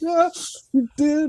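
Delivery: mock crying while speaking. Retelling answering a friend's taunt at night's end: imitating own past crying. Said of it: "I'm crying".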